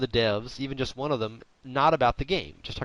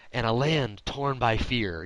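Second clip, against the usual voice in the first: movie trailer narrator impression, much slower. Describing how formulaic bad movie trailers are, a speaker does a movie trailer narrator voice. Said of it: "bad movie trailers and they have that Mr. Voice".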